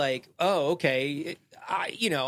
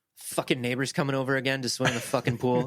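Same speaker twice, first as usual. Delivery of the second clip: put-on annoyed grumble, lower pitch; 4 semitones lower than usual. Retelling a father's grumbling about neighbors using the pool: imitating an annoyed father. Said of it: "my father, who was like".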